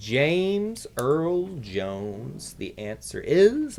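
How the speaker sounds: little sage creature character voice. Reading out a quiz answer, talking like Yoda. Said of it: "I'm talking like Yoda for some reason".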